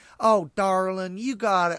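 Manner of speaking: Dixie twang accent.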